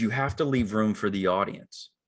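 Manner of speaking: normal talking voice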